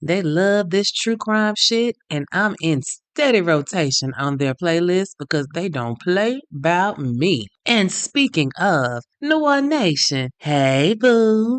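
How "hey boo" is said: voice shifting to doting, loving affection. Greeting the New Orleans Nation listeners: changed, loving voice. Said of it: "You see how my voice changed?".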